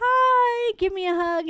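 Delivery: very high, merry voice, hi drawn out. Recalling Mary walking up wanting a hug: imitating Mary's merry greeting. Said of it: "very merrily just walking up and being like".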